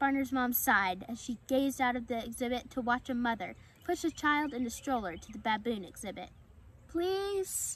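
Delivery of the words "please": high, earnest, begging and pleading tone. A son asks his mother once more, begging. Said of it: "Barner begged".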